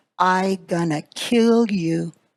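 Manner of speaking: very slow, deliberate, each word spaced. Retelling what a man said after glaring at him, very slow and deliberate. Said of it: "very slowly and deliberately he said to me".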